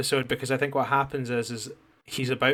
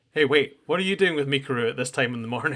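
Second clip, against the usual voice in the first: mock pointed, suspicious, really accusatory tone. Speaker recounting a story where a man answers a late-night call, mock-accusatory tone. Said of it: "Really, really accusatory".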